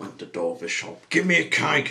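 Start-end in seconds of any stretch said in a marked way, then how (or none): 1.1-1.9 sharp, grumpy, loud, high snap. Mr. Grumpy crashes through the cake shop door; snapped. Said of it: "snapped Mr. Grumpy".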